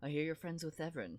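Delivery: bold, showy confidence full of bravado and swagger. Voicing the handsome bard Stefano greeting others: Stefano voice full of bravado. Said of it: "full of bravado, which I will do my best to, to portray".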